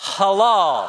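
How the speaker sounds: shouting. Leading a crowd in saying the Hebrew word: shouting the word halal. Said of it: "why don't you say the word halal shouting".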